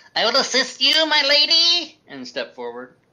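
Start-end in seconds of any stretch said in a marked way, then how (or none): 0.1-2.0 very high, loud, put-on nerdy voice. Voicing a character who pushes up missing glasses: nerdy character voice. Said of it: "say in this voice".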